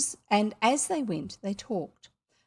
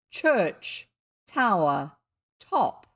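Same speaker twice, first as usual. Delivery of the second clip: deepest voice, drawn-out, deliberate, very slow; 3 semitones lower than usual. Reading a story where a boy calls down from a tower: deepest voice, very slow and loud. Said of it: "in his deepest voice, very slow and loud".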